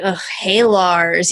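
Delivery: mock grudging, clearly displeased, reluctant, unhappy tone. Discussing a cartoon pilot, acting out a character's mock-unhappy greeting. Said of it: "Steven was not all that happy to talk to him".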